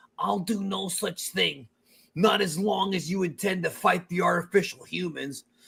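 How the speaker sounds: earnest, resolute anime hero voice with firm resolve. Acting out a scene opposite a partner voicing another character, Trunks voice. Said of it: "You did a really good Trunks".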